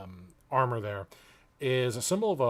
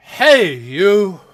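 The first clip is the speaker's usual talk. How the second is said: very loud, commanding, pitched-up authoritative voice; 7 semitones higher, 16 dB louder than usual. Voicing a stranger who stops a player's character: commanding voice. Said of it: "this commanding voice".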